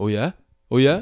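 put-on defensiveness. Retelling a post-game answer to a reporter's question: mock-defensive. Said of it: "he's getting all defensive".

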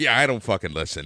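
mock nonchalant, offhand, indifferent delivery. Speaker retells what a woman now says about his shows; mock-nonchalant retelling. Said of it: "now it's just so nonchalant".

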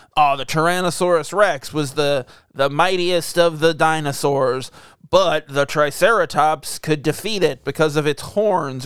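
ordinary talk, nothing marked

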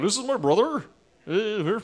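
put-on Cornwall accent. Showing the others a Cornwall accent when asked: Cornwall accent. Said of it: "can you do specific, the Cornwall accent?".

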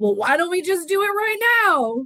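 yell climbing in pitch. Telling how a celebrity chef arrived at the restaurant, imitating Robert Irvine's trademark yell. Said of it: "And he yells, his trademark yell".

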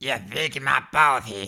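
put-on bratty cartoon boy voice. Acting out Eric Cartman meeting Mickey Mouse; do an Eric Cartman voice. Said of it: "when Eric Cartman met Mickey Mouse".

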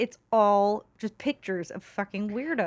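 ordinary talk, nothing marked

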